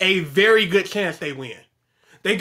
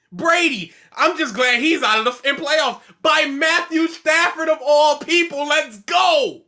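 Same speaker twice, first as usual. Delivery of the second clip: high, excited, thrilled cheer; 8 semitones higher than usual. Answering a question about the NFL playoffs: excited. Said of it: "you sound really excited about this".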